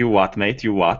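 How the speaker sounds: menacing, intimidating tough-guy voice. Using an intimidation skill on captors in a tabletop game: intimidating thug voice. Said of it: "use my intimidation skill".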